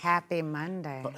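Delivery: very soft, low, hushed sultry murmur. Opening the live show on a Monday with a co-host: sultry, sexy voice. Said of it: "Sultry, sexy voice".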